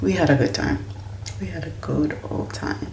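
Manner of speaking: soft, hushed, quiet talking voice.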